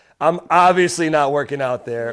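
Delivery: plain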